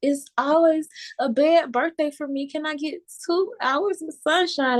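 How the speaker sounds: play-acted, tearful, crying, hurting voice. Retelling a past prayer for sunshine on a stormy birthday: retelling own tearful plea. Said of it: "crying and hurting".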